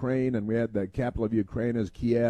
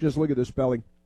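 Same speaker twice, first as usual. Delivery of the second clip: plain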